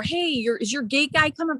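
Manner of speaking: mock screaming voice. Retelling how a neighbor yelled at the screen door, retelling a neighbor's scream. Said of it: "screaming at my screen door".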